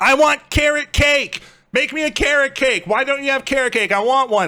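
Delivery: very high-pitched voice. Acting out a customer demanding carrot cake in a kitchen analogy: demanding Karen customer. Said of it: "just being a total Karen".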